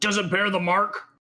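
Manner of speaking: mild, yell-like calling out. A game master voices a voice the players hear, yelling. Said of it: "You hear the same voice yell".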